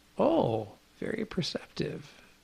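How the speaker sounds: whispered under the breath, hushed and very quiet. Retelling a remark made to them during a show: imitating someone speaking quietly. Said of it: "he said it very quietly to me".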